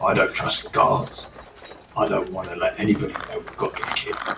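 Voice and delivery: hushed, quiet whisper. Telling another character secretly about the kids: whisper. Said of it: "I'll whisper to him".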